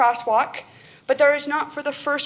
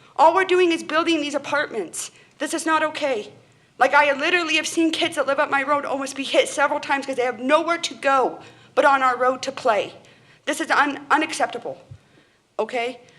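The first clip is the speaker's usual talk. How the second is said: getting a little upset, worked-up, stumbling speech; 3 semitones higher than usual. Addressing listeners about new apartments and kids' safety, a little upset. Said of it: "I'm getting a little upset".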